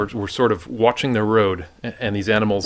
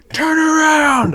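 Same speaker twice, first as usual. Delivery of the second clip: very high, loud shriek; 6 dB louder than usual. Retelling own reaction right after a frantic radio call on safari: retelling own scream. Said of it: "I just like screamed".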